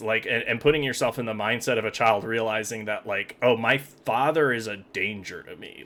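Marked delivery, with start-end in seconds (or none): none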